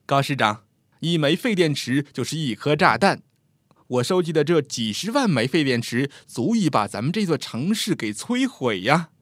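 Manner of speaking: plain reading voice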